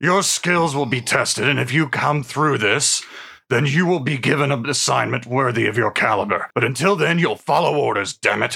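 gruff dwarf character voice. Voicing the dwarf captain answering a team member who wants a better task, gruff Darrow Drillheart voice. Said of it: "[name] Drillheart, a gruff, one-armed mountain dwarf fighter".

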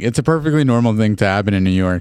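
ordinary talk

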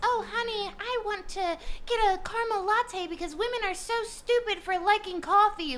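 shrill, high-pitched, airheaded, ditzy woman voice. Criticizing comedians who pretended to be their lady friends, imitating their lady friends. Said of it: "pretended to be their lady friends, and talked like this".

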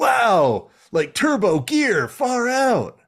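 very high, swooping, sing-song cartoon cheetah voice. Describing how a show's characters sound, imitating the cartoon cheetah character. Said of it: "that's the cheetah one".

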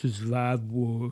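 low, soft put-on voice slipping into southern twang.

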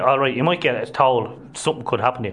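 ordinary talk, nothing marked

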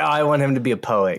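ordinary talk

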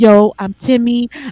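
slow, loud, swaggering bro voice.

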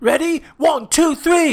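high, loud, angry chef-style shouting. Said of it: "And then".

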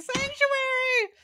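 very high, frantic, panicked shriek. Acting out running into a church for safety: screaming Sanctuary. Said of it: "I would just run screaming".

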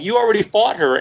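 play-acted frustrated outburst. Retelling yelling at the computer while watching an episode: imitating own past yelling. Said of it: "I was yelling".

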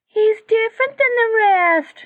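high-pitched voice. Forrest replies to one who has lived 140 years on the mountain, high-pitched voice. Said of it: "said in a high-pitched voice".

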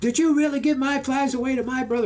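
mock very high-pitched, angry, mad yell. Recounting a day on the river, acting out a man who yells, retelling a mad yell. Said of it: "He yells".

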